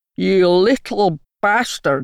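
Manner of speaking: furious, angry growl. Narrator reading Dickens's words to Hamish after his fall, growling angrily. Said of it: "he growled".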